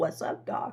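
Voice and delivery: breathy, hushed, whispered cartoon rabbit voice. Retelling how a doctor heard the patient answer: Bugs Bunny voice. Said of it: "that's what he said to the doctor in that voice".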